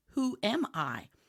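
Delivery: ordinary talk, nothing marked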